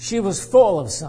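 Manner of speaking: stress punched on "full", line said quickly. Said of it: "I'm gonna emphasize this word full".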